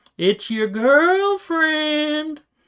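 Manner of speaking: very high put-on little-kid voice. Voicing a character who answers who is at the door: very childlike voice. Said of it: "she puts on a very childlike voice".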